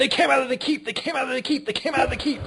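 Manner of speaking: very high, screeching goblin shriek. Voicing a little goblin that screams at the party: goblin screaming. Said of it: "the little goblin screams".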